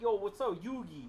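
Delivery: put-on loud high Brooklyn kid voice. Mocking a cartoon character who seems like a random kid from Brooklyn: Joey as a Brooklyn kid. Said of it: "random, like, kid from Brooklyn".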